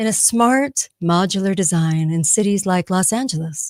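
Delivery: gentle, soft, soothing calm voice. Reading a passage aloud in a voice meant to calm: calming voice. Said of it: "I'm going to say it in a voice that makes you calm".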